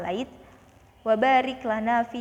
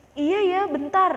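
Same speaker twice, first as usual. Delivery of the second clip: irritated, high, snappy, raised voice; 8 semitones higher, 4 dB louder than usual. Acting out someone asked for an errand while playing: raised, snappy reply. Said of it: "udah dengan nada tinggi".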